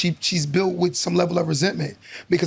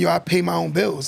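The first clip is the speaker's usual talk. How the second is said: ordinary talk, nothing marked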